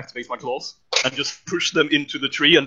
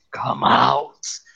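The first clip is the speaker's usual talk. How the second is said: deep, low, growling voice. As the character rips a tree open and prods inside, loud low growl. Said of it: "gonna growl in really uh, loud and low voice".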